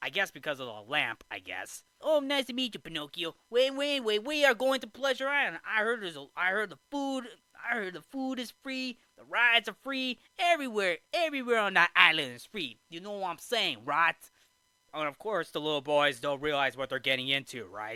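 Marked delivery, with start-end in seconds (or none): 2.0-14.1 put-on high-pitched New York accent. Retelling the film, voicing Lampwick telling Pinocchio about Pleasure Island: Lampwick's New York accent. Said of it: "a delinquent boy with a New York accent".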